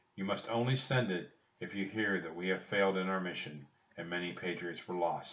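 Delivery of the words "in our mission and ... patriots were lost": ordinary delivery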